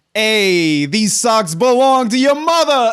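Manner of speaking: put-on loud, old-school Italian American accent. Retelling your reply to the other speaker, in an old-school italian american accent. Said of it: "if you say it with an old school Italian American accent".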